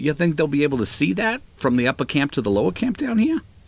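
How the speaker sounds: put-on New York Queens accent, high. Role-playing a character speaking to another character, put-on Queens accent. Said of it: "gotta get my Queens accent going here".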